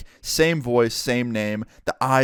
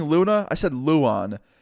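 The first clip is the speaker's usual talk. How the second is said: plain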